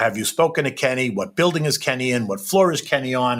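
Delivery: ordinary talk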